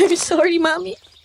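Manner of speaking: tearful. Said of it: "Naiiyak kasi ako sa'yo".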